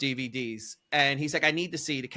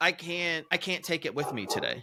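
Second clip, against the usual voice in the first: put-on mock crying, tearful; 2 semitones higher, 5 dB quieter than usual. Telling a story, the speaker acts out a woman breaking down, imitating someone crying. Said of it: "She starts crying".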